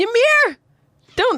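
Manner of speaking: ugly, messy, gross, high-pitched yell. Voicing a character running toward a friend: gross yell. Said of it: "That was a really gross yell".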